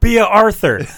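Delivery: put-on shouting. Retelling a comic panel where a character shouts at the tv: imitating a shout. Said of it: "he shouts at the T V".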